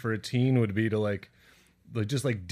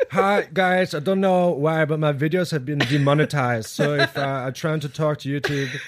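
put-on weird, vague European accent; 4 semitones higher, 6 dB louder than usual. Speaker plays a YouTuber addressing his viewers, in a weird Lars accent. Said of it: "I got into a real weird accent".

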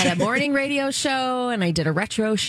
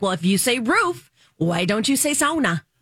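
normal talking voice

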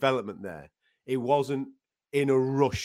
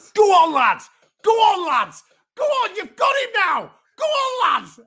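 very high, very loud, shrill cheering shout; 11 dB louder than usual. Retelling how a nine-year-old shouted at the TV; imitating Teddy shouting. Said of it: "he was shouting at the TV".

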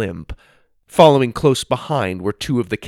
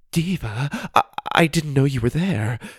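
stammering, higher pitch; 4 semitones higher than usual. Narrator reads Jessica, pretending to be stunned in a filmed scene, addressing Diva; stammering. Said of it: "she stammered".

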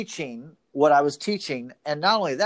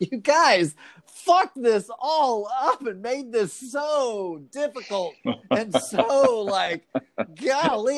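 laughing while talking, high pitch, long drawn-out "so"; 7 semitones higher than usual. Picturing the supreme being and Jesus together, acting out their words while imitating someone laughing. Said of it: "he and Jesus will be sitting there laughing".

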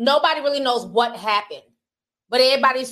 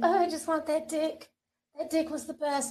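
fake seductive voice, very soft and hushed; 4 semitones higher, 9 dB quieter than usual. Showing a video, the speaker mimics the so-called victim's voice: mock sexy voice. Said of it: "Trying to sound all sexy and shit".

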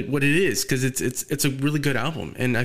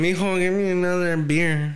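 mock drunken slurring, higher pitch; 5 semitones higher than usual. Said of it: "You're fucking drunk singing".

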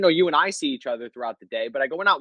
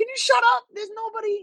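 very high, shrieking, scolding scream. Retelling a night the dog kept barking at the door: imitating screaming at a dog. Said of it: "I was screaming at him".

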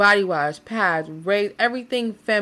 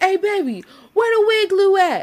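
mock shouting, higher and louder; 11 semitones higher, 5 dB louder than usual. Acting out a partner looking for wig glue: imitating him yelling downstairs. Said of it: "yelling downstairs".

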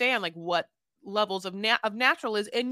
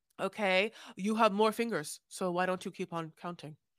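mock dry, deadpan delivery, quieter; 3 semitones lower, 5 dB quieter than usual. Retelling a man's comeback to a woman's demands, imitating his dry delivery. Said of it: "he delivers that line so dryly".

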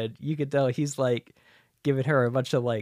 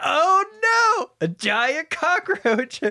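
put-on frightened outcry, much higher; 5 dB louder than usual. Retelling a character spotting a giant cockroach, imitating a scared shout. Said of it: "He's super scared".

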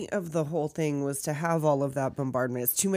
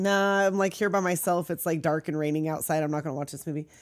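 ordinary talk, nothing marked

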